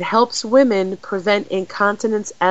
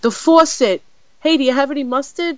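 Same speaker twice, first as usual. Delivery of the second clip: New York accent slipping out, pitched up; 6 semitones higher than usual. Telling listeners a childhood bathroom story, the speaker lapses into a new york accent. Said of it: "there comes my New York accent".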